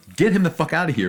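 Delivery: play-acted panicked screaming at very high pitch. Retelling finding a mouse and yelling at the cat, retelling panicked yelling. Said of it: "I'm yelling at the cat".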